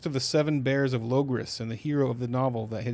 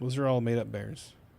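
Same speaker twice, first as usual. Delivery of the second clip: plain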